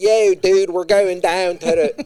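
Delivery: high, loud Philadelphia accent, classed-up Baltimore tinge. Comparing Baltimore and Philly accents, the speaker demonstrates a Philly accent. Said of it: "Philly's just like that, but a little".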